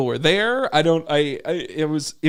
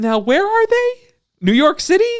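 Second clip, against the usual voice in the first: very high, shrill, loud, carrying voice; 12 semitones higher, 5 dB louder than usual. Retelling a woman in a movie audience talking to her husband; imitating someone speaking loudly. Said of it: "the lady very loudly says to her husband".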